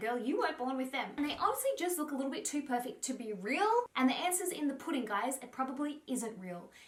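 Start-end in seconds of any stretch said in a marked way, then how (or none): none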